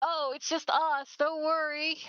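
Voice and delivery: friendly call-out. Playing Ruby, asked who's there, the speaker answers with a non-threatening yell. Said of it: "Ruby yells out in a non-threatening voice".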